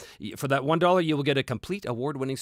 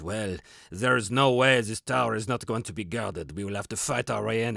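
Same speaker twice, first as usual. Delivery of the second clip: put-on French accent; 3 semitones lower than usual. Retelling a game session, the speaker quotes Professor Dungeon Master's French accent. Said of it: "he says in his French accent".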